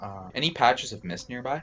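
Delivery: ordinary delivery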